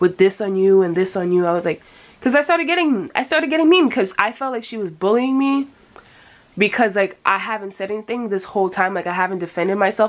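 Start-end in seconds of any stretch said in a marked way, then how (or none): none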